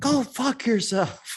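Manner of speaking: shrill, high-pitched shout. Retelling someone across the hall shouting at a kid at midnight, imitating someone shouting. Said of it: "I hear somebody shout".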